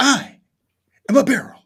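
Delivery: very slow, loud, high-pitched declaiming voice. Doing the impersonation another speaker just mentioned: William Shatner impression. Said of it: "doing your Shatner impersonation".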